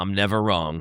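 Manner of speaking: very low-pitched, put-on menacing voice. Acting out a predictor who cocks a gun: acting out a gunman. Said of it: "he just cocks the gun like".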